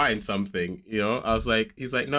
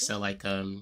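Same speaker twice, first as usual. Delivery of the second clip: put-on sheepish child voice, quieter; 3 semitones lower, 8 dB quieter than usual. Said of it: "sheepish and stuff".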